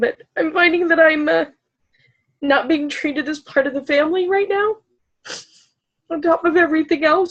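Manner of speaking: high, tearful voice, talking through tears. Speaker talks about a hard family situation and apologizes, crying while talking. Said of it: "sorry for crying".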